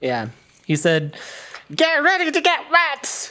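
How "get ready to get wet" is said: high, gravelly, growling goblin voice. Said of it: "Except more gravelly".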